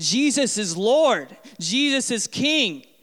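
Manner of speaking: very slow, drawn-out, high scream. Imagining proclaiming faith in a Costco aisle: screaming in a store aisle. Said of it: "start screaming in the aisle".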